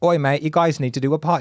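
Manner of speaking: put-on British accent. Recalling when the podcast first started, imitating Ryan's British accent. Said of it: "He's British".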